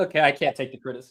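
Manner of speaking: put-on crying, fake sobbing. Answering a critique of their toy with mock crying. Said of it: "stop crying, you little bitch".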